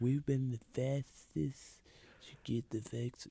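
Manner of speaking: very soft, hushed, feeble impersonation under the breath. Quoting a debate line as Donald Trump: Donald Trump impression. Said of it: "Do I sound like Donald Trump?".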